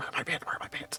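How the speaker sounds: half-whispered, very quiet, hushed voice. Voicing a character asking for her pants: acted half whisper. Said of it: "a half a whisper".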